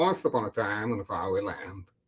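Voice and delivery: low, deep, dramatic film-trailer style narrator voice. Showing a Morgan Freeman impression on request: Morgan Freeman voice. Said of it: "Morgan Freeman".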